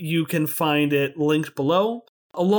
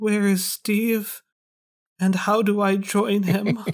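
stunned, dazed, matter-of-fact delivery; 3 semitones higher than usual. A storyteller voices a man watching a companion's silhouette fade away: quiet. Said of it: "he quietly says".

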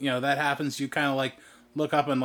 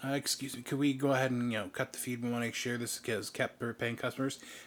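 soft-spoken, polite, quieter voice. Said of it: "comes up, is like".

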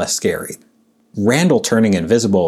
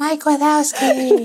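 scary put-on character voice, higher. Doing the line again after the other speaker tries: scary Boo voice. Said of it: "a little bit of The Shining".

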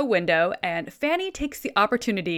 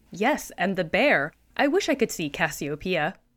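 ordinary delivery

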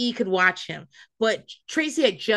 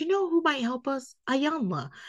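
mock, feigned spontaneous, casual, offhand tone; 4 semitones higher, 6 dB quieter than usual. Retelling a show preview where Tawanda suggests help: imitating Tawanda acting like she just thought of it. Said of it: "She says it like she just thought of it".

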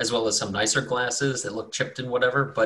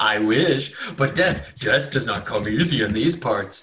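mock laughing while speaking through the lines; 4 dB louder than usual. Describing a character's reply, the speaker retells him laughing while talking. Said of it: "he just starts like cracking up".

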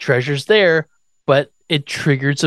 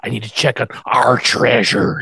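put-on creepy creature voice, lower; 3 semitones lower than usual. Retelling a character's line about the treasure: weird Gollum-like voice. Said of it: "It's like Gollum".

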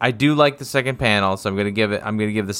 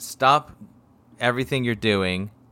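ordinary delivery

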